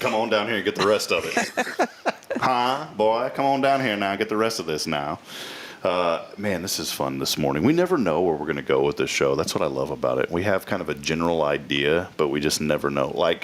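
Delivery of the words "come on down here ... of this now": put-on voice of an old Louisiana preacher. On a morning show, after talk of accents, doing an old Louisiana preacher voice. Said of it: "that old preacher in Louisiana".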